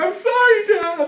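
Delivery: very high, loud crying out. Game narrator voicing Frankie calling out from his nightmare. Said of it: "call out from his nightmare".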